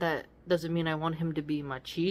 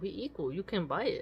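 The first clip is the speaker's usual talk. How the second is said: put-on plain speech in a Mexican accent; 4 semitones higher than usual. Retelling how he answers a request for money, in his Mexican accent. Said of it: "he says it with his Mexican accent".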